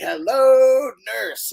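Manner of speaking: very high, squeaky cartoon character voice. Recounting taking a picture with him, retelling his greeting in the Animaniacs voice. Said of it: "in the voice".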